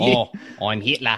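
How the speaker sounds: put-on New Zealand accent. Joking about a New Zealand accent, imitating a movie character: New Zealand accent. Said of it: "Does he have a New Zealand accent in that movie?".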